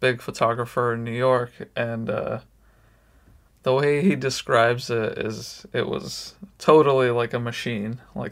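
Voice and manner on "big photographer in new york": ordinary talk, nothing marked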